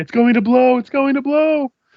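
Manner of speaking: very high, shrill alarmed shout. Narrating a tabletop game scene, voicing a man running from the tannery, shouting. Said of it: "a human man is running from the tannery shouting".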